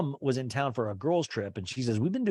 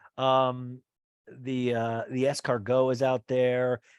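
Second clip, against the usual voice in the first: ordinary delivery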